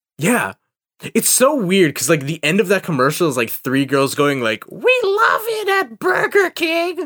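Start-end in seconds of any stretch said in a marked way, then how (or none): 4.7-7.1 put-on very high, drawn-out old crone voice. Imitating three girls from an old commercial: Skeksis voice, like old crones. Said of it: "You made them sound like Skeksis from Dark Crystal".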